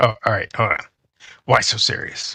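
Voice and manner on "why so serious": slow, stretched comic-book villain drawl, every word dragged. Trying the line once more after being told it drags: Joker voice. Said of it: "now you're dragging it".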